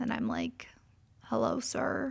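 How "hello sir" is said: mock fearful, soft, little frightened voice. Driver retelling how she greeted a cop who pulled her over: retelling a scared hello. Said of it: "with fear in my eyes".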